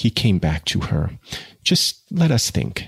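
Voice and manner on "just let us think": timid, shy, much higher. Sue stops her lover Jude at the door, speaking timidly. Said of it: "she said timidly".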